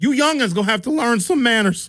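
put-on very high, grumbling elderly voice. Complaining about loud car stereos at a park jazz event: pretending to be an old person. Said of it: "I wanna sound like an old person".

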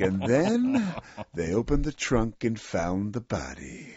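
swooping, sing-song pitch like a crime-show host narrating. Retelling a scary Dateline moment: Keith Morrison impression. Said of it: "Keith Morrison's like".

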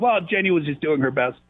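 plain

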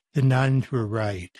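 solemn, grave, hesitant, with a pause first. Retelling a joke answer given to an audience: soft voice. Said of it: "in a soft voice".

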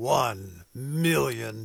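deep movie-trailer announcer voice. Reading out a donation challenge, the speaker can't help using a movie announcer voice. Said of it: "hard not to say that in movie announcer voice".

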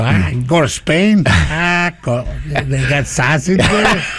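slow, unhurried put-on Chicago accent. Joking that the Pope is from Chicago: Chicago accent. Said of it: "he's Chicago".

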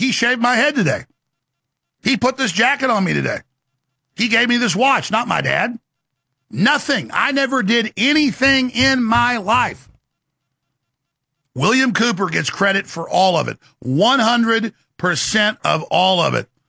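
ironic, sarcastic delivery. Mocking critics who credit someone else for everything: sarcastic. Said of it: "I'm being sarcastic".

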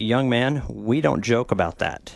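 severe, no-nonsense, very stern scolding tone. Retelling what the TSA agent said after a joke: imitating a stern scolding. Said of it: "he gave me a very stern talking to and said".

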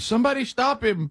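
very high, frantic mock scream. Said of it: "run out frantically screaming".

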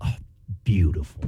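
sarcastic, breathy whispered mutter under the breath. Retelling how he would repeat it under his breath: imitating sarcastic mutter under breath. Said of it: "Just very sarcastic".

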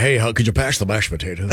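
ordinary talk, nothing marked

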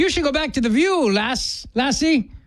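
put-on speaking in an Irish accent. Playing someone at a bar in Ireland talking to Rosie, Irish accent. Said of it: "I don't do an Irish accent".

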